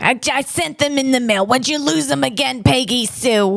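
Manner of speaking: put-on old-time Brooklyn secretary accent. Showing off the only accent they can do: 1940s Brooklyn secretary accent. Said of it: "a nineteen forties chain smoking secretary accent from Brooklyn".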